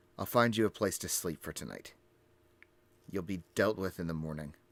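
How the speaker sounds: low, begrudging, completely fed-up mutter. Tariq begrudgingly stalks back to the group after a muffled conversation; Tariq, fed up. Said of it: "he's so over it".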